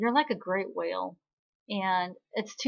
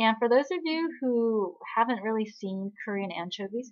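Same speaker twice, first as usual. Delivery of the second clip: plain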